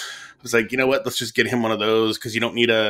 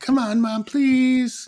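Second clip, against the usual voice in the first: put-on very high, drawn-out, pleading child voice. Act out Benjamin begging his mom at bedtime, imitating Benjamin begging. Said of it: "he like begged Becca".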